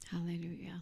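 soft, unvoiced, whispered "hallelujah".

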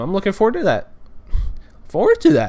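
voice breaking mid-phrase, high and quick. Describing a little console to take to friends' houses, voice cracking. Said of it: "Voice cracking, I guess".

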